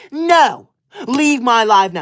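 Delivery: angry, fed-up, cross tone. A livestreamer, asked by a viewer to stop talking angry, answers talking angry. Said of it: "I am talking angry".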